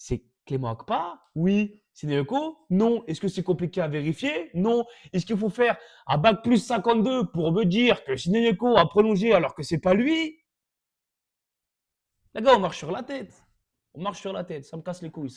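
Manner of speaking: fed-up angry rant, composure gone, pitch climbing high. Complaining about an article wrongly reporting that sideyoko extended, losing calm, angry rant. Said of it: "Ils m'ont eu. Je voulais rester calme".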